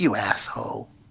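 muttered under the breath. Retelling a female soldier answering her superior at the academy, muttered under her breath. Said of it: "under her breath she goes".

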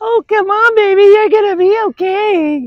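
acted, very high soothing voice, "okay" stretched out. Demonstrating how people talk to a fearful dog, consoling voice. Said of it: "did you like that voice ... it's a consoling voice".

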